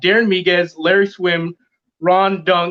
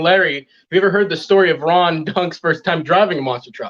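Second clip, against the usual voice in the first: ordinary delivery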